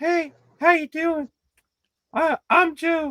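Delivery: put-on very high, childlike little kid voice. Imitating a guy the speaker knew introducing himself, in a little kid voice. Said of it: "he sounded like a little kid".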